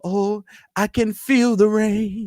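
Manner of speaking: very high, slow, lovestruck swooning gush. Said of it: "They just get moist".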